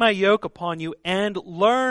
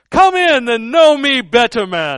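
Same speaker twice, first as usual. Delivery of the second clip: booming out at full volume; 5 semitones higher, 10 dB louder than usual. Comparing Jesus's words to the Christmas ghost's, using the Muppet Ghost of Christmas Present accent. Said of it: "I'm using the accent from, you know, the Muppet Christmas Carol".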